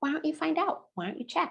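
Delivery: encouraging, supportive, coach-like tone. Modeling a reply to someone asking about their mask, in a supportive coaching voice. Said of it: "in a supportive uh, and coaching voice".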